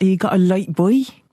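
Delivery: Fens country local accent. Asked what a Fenlander accent sounds like, speaker gives an example: Fenland accent. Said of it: "What does a Fenlander accent sound like?".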